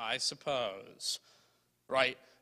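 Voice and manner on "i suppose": put-on sarcastic edge, lower in pitch and quieter. Speaker acting out Simon's reply to Jesus, Simon's sarcastic 'I suppose'. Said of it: "a little bit of edge to it".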